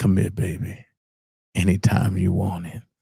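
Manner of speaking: creaky late-night radio host voice, DJ patter. Asking viewers about bringing back a late-night show, in a late-night radio host voice. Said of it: "a late night, a radio host voice".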